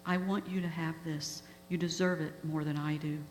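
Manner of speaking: ordinary talk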